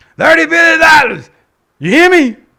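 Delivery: very loud, high, shrill screaming speech. Mocking a speaker's line while reacting to the speech: imitating Joe screaming. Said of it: "He's screaming".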